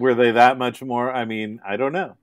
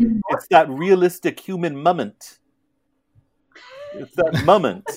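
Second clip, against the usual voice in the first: sing-song, up-and-down swinging, put-on Russian accent; 6 semitones higher than usual. Quoting what the player said last week: imitating Tony's accent. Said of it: "But that accent of his".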